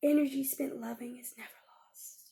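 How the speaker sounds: whispering.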